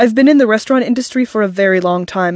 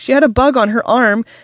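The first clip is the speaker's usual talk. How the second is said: ordinary talk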